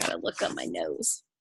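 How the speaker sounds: very soft, unvoiced muttered aside.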